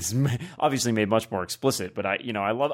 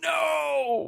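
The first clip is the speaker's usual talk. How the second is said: put-on anguished yell, higher pitch. Mocking an actor's unfortunate line delivery: imitating Mark Hamill's yelled no. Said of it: "Mark Hamill has his unfortunate".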